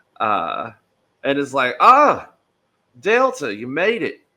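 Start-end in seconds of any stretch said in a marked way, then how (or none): 1.8-4.1 animated, high, loud, swooping big-bear voice. Voicing a bear who greets a guest at the door: voicing a bear doorman. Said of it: "a big, uh, brown bear in overalls and a floppy hat".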